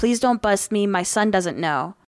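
mock imploring, pleading, begging voice. Retelling a woman caught at a security check, imitating someone pleading. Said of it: "She started pleading with them saying".

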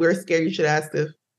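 ordinary delivery

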